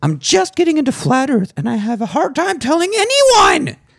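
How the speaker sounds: very high put-on girly voice. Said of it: "do you wanna do a girl voice?".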